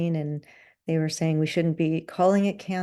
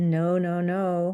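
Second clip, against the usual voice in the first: put-on Colombian accent on English words. Retelling how a friend phoned after getting an email, imitating Adriana's Colombian accent. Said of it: "in her Colombian accent".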